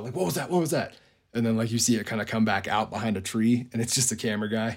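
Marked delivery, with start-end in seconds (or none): 0.2-0.9 mock spooked, high, freaked-out voice. Retelling how a man saw something moving in the woods: imitating someone freaking out. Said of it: "freaks out".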